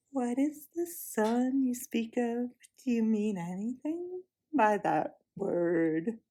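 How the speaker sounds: gentle, slow, soft wood-pigeon coo. Narrator reading the witch's question to the children, in a soft cooing voice. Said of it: "cooing softly like the voice of a wood pigeon".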